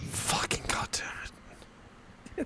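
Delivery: whispered, seething rage through clenched teeth. Reacting to a player's high roll: rage through gritted teeth. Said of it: "the fucking rage through the teeth there".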